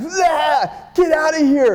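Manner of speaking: very high, very slow, drawn-out enraged scream. Retelling how a woman reacted during a misunderstanding: imitating an angry scream. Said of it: "angry fucking drag".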